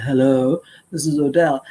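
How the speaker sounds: deep, low-pitched man's voice. Two hours after the speaker gave out a business card, Odell introduces himself in a deep voice. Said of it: "this deep voice said".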